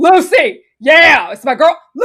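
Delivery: loud, drawn-out yell. Retelling what Steven called out from his bike, retelling a yell. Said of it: "why are you yelling?".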